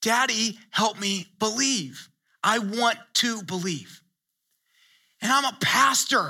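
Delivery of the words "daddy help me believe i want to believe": put-on tearful voice, close to crying. Retelling a son pleading at night for help to believe: imitating a tearful plea. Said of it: "Pleading to the point of tears".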